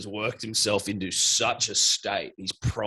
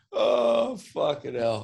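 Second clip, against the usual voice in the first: laughing hard to tears, higher pitch; 4 semitones higher than usual. Cracked up by a joke, the speaker tries to recover: laughing to tears. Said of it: "I got tears".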